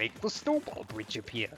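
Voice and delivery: sing-song character voice with pitch swooping all over. Showing the voice often done in an old LP: Hotel Mario voice. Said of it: "I do the Hotel Mario voice".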